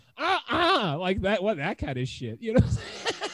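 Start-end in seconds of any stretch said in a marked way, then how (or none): 0.2-1.0 acted entitled rant, higher and louder. Retelling a video of a woman pulled over: imitating a Karen. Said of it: "She was about to Karen hard".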